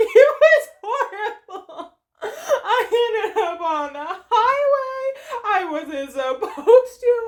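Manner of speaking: play-acted very high, loud, drawn-out blubbering. Retelling what the speaker told a woman after arriving in tears, imitating own sobbing. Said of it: "and I'm sobbing".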